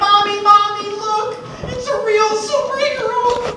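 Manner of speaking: put-on excited little boy voice, very high, loud squeal.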